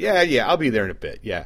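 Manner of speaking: casual, nonchalant, playing it cool.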